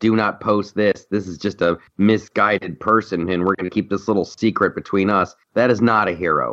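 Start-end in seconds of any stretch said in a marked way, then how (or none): none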